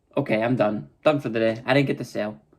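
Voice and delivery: ordinary talk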